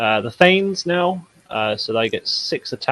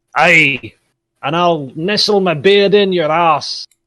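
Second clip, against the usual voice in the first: bad put-on Scottish accent, high and loud; 7 semitones higher, 5 dB louder than usual. During a showdown scene, a character threatens his opponent in a terrible Scottish accent. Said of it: "That was a terrible Scottish accent".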